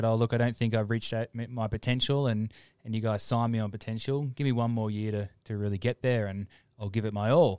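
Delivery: ordinary talk, nothing marked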